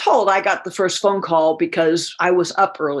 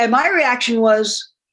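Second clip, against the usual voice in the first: ordinary delivery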